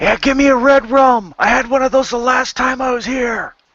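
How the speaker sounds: very high-pitched, loud holler. Leaning in close to order a drink from the bartender: yelling. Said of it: "lean in close to him and yell".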